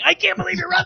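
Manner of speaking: put-on very high-pitched fan's screaming cry. Retelling what a fan screamed during a lopsided football game: imitating Mike Louie Lewitz screaming. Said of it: "he's screaming".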